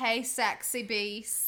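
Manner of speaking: put-on Australian accent. Acting out what a man said to his mother, in an Australian accent. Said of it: "Good Australian accent".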